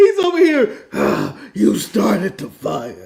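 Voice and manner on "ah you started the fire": voice pushed out low and rough. Mocking how the line was read: Batman voice. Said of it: "He's in full Batman voice, constipated".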